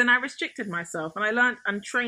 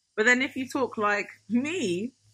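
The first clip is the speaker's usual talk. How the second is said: ordinary talk, nothing marked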